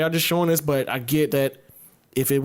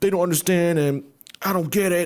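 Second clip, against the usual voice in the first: mock old man crying, higher; 4 semitones higher than usual. Imitating an old man crying on tv about a wealth tax: imitating an old man crying. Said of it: "an old-ass dude crying".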